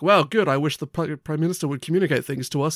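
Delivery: plain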